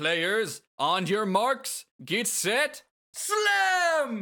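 announcer voice, slow build to high, loud call. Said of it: "The announcer says".

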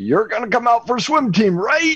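big, booming coach voice pitched very high. Recalling the swim coach calling out on campus, in his booming voice. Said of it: "he had this booming voice".

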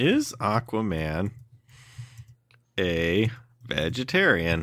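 very slow, each word deliberately stretched out. Repeating another speaker's question aloud, very slowly. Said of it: "Were you just asking me very slowly".

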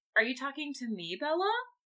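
mocking, dismissive, snarky, snide tone. Acting out a classmate's reply while retelling a book scene: snarky. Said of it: "be a snarky asshole".

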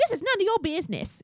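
put-on Russian accent. Retelling Christina's reply in a fight over a rose, Christina's Russian accent. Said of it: "in her Russian accent".

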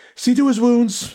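very loud, high-pitched barking delivery. Narrator reads a character speaking about a wounded scout, barked. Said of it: "Oishi barked".

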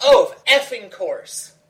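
top-of-the-lungs, shrill, very loud yell. Retelling a woman's outburst on a flight, imitating a shout at full volume. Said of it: "at the top of her lungs".

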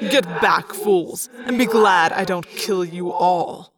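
sneering, scornful, contemptuous voice. Narrator reads an unseen voice addressing the Hork-Bajir mid-fight, sneering. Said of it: "a sneering, thought-speak voice said".

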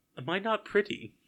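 high, put-on Australian accent with hurt tone. Quoting a character's line from a film scene: attempted australian accent. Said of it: "What was that accent".

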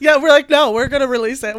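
loud, belted, laughing mock defiance.

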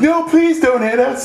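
very high-pitched put-on pleading, begging tone. Speaker acts out characters in a scene they describe: mock begging. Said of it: "And they start begging".

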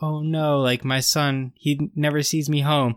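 slow, mournful, sorry-for-himself lament. Acting out how a father is supposed to sound about his son, mock-sad. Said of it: "it's supposed to be like this, like, sad".

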